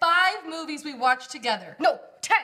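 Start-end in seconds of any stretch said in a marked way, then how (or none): none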